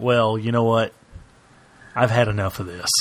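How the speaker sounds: normal talking voice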